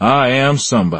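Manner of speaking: passionate Southern voice.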